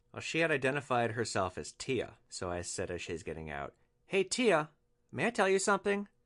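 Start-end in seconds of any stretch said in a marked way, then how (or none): 4.1-6.1 very calm and very high voice. Retelling what was said to a drunk passenger getting out: retelling saying it very calmly. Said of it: "And I said it really calmly".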